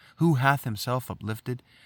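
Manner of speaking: plain reading voice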